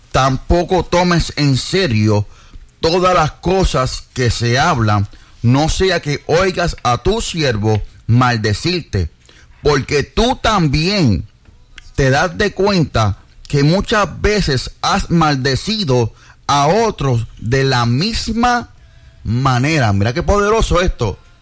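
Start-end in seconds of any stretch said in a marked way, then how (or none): 0.1-19.9 slow, measured reading voice. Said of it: "los voy a leer despacio".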